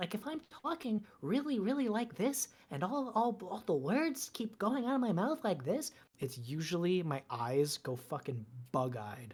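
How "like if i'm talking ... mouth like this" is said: high put-on twink voice, words spilling out fast. A performer shows how his twink voice sounds, in twink voice. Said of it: "my twink voice sounds a lot like this".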